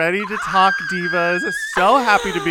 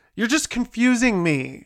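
put-on angry complaining voice, higher; 3 semitones higher than usual. Retelling how mom reacted to a podcast request: imitating an angry mom. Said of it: "She got extremely mad at me".

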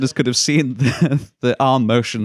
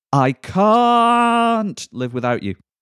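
very posh, very high, drawn-out "can't"; 9 semitones higher than usual. Reading out a quiz quote for others to guess: very posh voice. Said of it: "a very bad word in a very posh voice".

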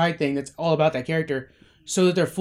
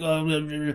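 put-on drunk voice, quieter; 5 dB quieter than usual. Imitating a cartoon character stumbling around drunk: imitating drunk Rick. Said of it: "That's him just drunk on set".

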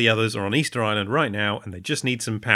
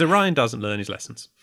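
plain

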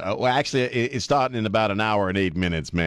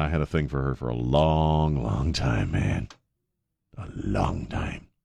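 creepy, very low, slow, long drawn-out voice; 7 semitones lower than usual. Speaker admitting a long-time crush on a celebrity, creepy voice. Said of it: "Am I creeping you out with my creepy voice?".

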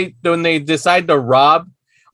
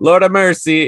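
put-on Jamaican accent. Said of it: "all Jamaican".

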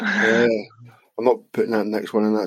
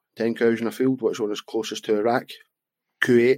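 ordinary delivery

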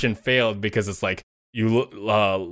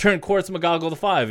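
put-on high, shouted call; 7 semitones higher than usual. Retelling shouting instructions to a girlfriend during a two-player game, retelling a shout. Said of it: "And so I'm like shouting like".

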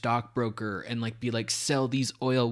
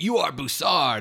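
mock shouting, loud raised yell; 4 semitones higher, 6 dB louder than usual. Retelling a movie scene where a character yells at a head: imitating someone yelling. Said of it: "yelling at it".

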